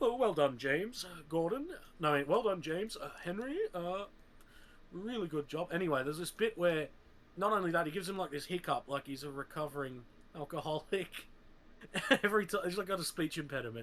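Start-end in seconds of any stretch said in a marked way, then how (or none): 0.0-5.7 pompous, self-important, fruity voice. Quoting a line from one version of Gordon, in a pompous, fruity Gordon voice. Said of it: "he sounds a little pompous and fruity".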